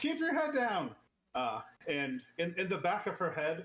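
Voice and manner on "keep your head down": chirpy chirping. Voicing a character who calls a warning to Snakebite: chirping. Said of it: "gonna chirp to, uh, Snakebite".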